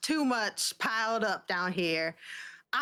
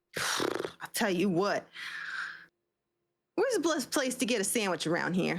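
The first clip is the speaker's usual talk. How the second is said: put-on New Jersey accent, overworked and laid on hard. Speaking in character during a scene, in a put-on Jersey accent. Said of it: "you're trying really hard to do a Jersey accent".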